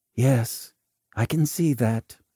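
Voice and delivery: ordinary talk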